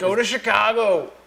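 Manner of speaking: put-on Chicago accent. Chatting about a live stream, in a put-on Chicago accent. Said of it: "That was my Chicago accent".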